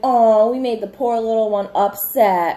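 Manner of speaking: put-on taunting tone. Retelling how everybody mocked a screaming, crying girl, mock-taunting. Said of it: "And everybody's like".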